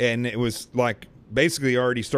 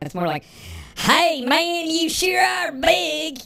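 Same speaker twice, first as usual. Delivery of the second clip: put-on twangy voice, higher. Redoing Dave's line after being told to add twang: twangy Dave voice. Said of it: "You need more twang in your, in your voice for him".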